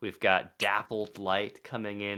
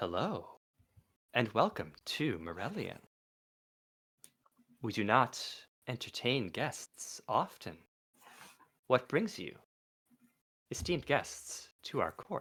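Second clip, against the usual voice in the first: enigmatic, mysterious, swooping sing-song voice; 2 semitones higher, 4 dB quieter than usual. A game master voices a lady greeting the players at court, mysterious voice. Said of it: "her mysterious voice".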